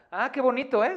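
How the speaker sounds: very high, loud, dripping mock-sweet sarcastic scolding. Teaching a first sarcasm lesson, quoting a mom in a messy room, imitating a sarcastic mom. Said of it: "Esa es tu primer clase de sarcasmo".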